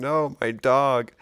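put-on grief-stricken wail, high and loud. Retelling a friend's reaction when his dog was killed: imitating a friend devastated.

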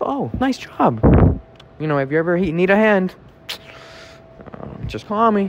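high-pitched, friendly lawyer voice.

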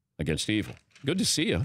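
ordinary talk

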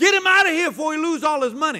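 urgent, loud, high-pitched shout. Retelling what a homeless man said to the wife: imitating a loud voice. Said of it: "I heard this loud voice from a homeless man".

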